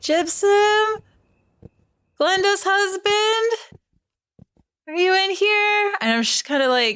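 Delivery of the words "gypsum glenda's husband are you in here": hesitant, timid half-call, very high and slow. Walking timidly into a building looking for a woman's husband: timid, voice raised slightly. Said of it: "not really yelling, but like voice raised slightly".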